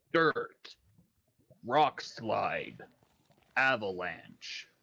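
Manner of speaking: acted game announcer delivery. Joking that the game announces dirt, the speaker uses a Halo announcer voice. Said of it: "The Halo announcer voice".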